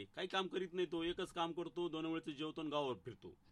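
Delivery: plain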